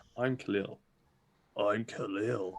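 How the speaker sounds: put-on low voice. Teasing a friend whose low voice isn't low, copying it: mock low voice. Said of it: "it's like you're going".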